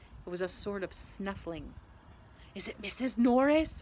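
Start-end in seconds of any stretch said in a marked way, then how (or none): 2.6-3.8 breathed, much slower. Reading a story aloud, a character squints through the dark at a noise, breathing the words. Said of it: "breathed Ron".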